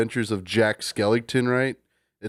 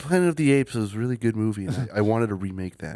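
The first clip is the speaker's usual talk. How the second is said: put-on mousy film-director voice. While the group debates how he really talks, pitch a remake in a mousy Tim Burton voice. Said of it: "I swear he's like all mousy".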